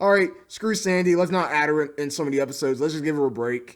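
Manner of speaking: ordinary delivery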